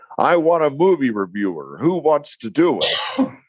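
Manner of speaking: high-pitched screaming, demanding tone. Retelling what the new news director screamed one morning: imitating someone screaming. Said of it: "he walks in and screams".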